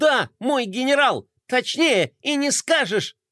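high, obsequious, eager-to-please, fawning outburst. A toy sidekick answers his general, with an obsequious exclamation. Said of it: "подобострастно воскликнул Мелкотрон".

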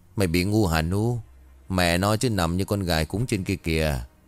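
plain reading voice

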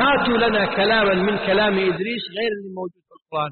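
ordinary talk, nothing marked

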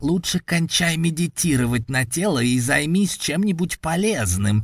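mocking, grinning demon tone. Narrator voicing the demon as it speaks to the hero: smirking demon voice. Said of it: "ухмыльнулся голосом демон".

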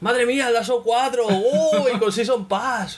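high-pitched, overexcited fake reaction voice.

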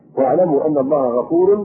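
normal talking voice

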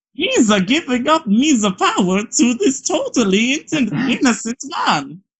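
very high, partly Italian put-on accent. Mid-story, the speaker suddenly slips into a half-Italian accent. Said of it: "suddenly go like half Italian with that".

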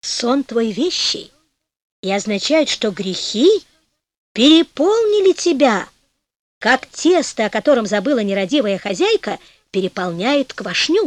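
ordinary delivery

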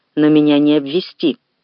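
ordinary delivery

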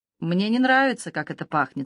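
ordinary delivery

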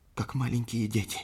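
high, hushed, barely-there half-whisper. The Sinhalese man answers the captain's question about the devils, half-whispering. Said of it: "прошептал сингалезец".

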